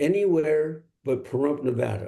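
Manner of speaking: ordinary talk, nothing marked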